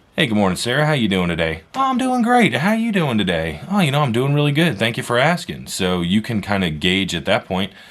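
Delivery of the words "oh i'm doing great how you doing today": imitated cheerful, great-mood voice, pitched much higher. A salesperson calls someone in a great mood; imitating a cheerful customer. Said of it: "they're in a great mood".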